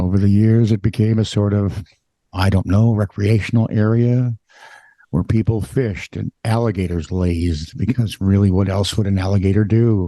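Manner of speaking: bored, weary tone. Reading a news story aloud at the other speaker's request, bored with the world. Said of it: "Read it like you're bored with the world".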